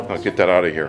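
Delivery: ordinary delivery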